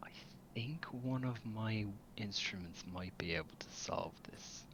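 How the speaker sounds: soft, hushed, discreet whisper. Kira nudges your arm and whispers to you discreetly: whispering. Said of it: "as she whispers to you".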